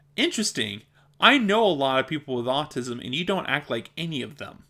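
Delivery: ordinary talk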